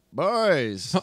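put-on creaky, high, drawn-out elderly man voice, calling out. Echoing another speaker's word, in an old man voice. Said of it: "you have a really good old man voice".

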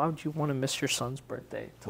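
ordinary talk, nothing marked

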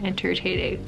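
soft, tired, low-energy voice. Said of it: "my energy is very low today".

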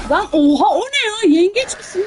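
shocked, blurted out high and loud.

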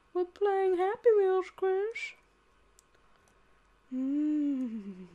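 creepy voice with the mmm drawn out. Talking to Chris while playing a game, in a Herbert the Pervert impression. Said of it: "my very first Family Guy impression of Herbert the Pervert".

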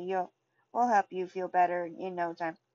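plain reading voice

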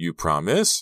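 voice full of doubt and uncertainty. Reading a story aloud, a girl asking her friend to promise: doubtful voice. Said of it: "her voice filled with doubt".

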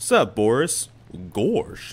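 bad, clumsy cartoon dog voice. Playing a game, greeting the character Boris in a really bad Goofy impression. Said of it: "I have a really bad Goofy impression".

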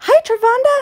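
imitated very high, slow voice.

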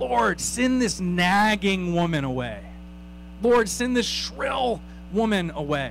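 put-upon whining. Acting out people asking the Lord to send a woman away: mock-whining. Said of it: "You can almost hear the whining in their voice".

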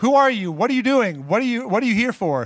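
high-pitched, put-on yelling, calling out. Retelling how the watchtower folks call out to the figure: imitating someone yelling. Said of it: "they yell out".

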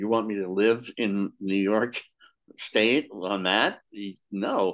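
ordinary delivery

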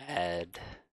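voice cracking, breaking on the word "add". Walking through writing a function in code, voice cracking. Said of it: "my voice cracked".

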